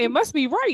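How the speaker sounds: laughing loudly and high.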